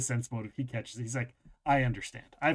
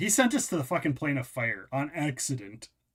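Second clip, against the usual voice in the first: ordinary talk, nothing marked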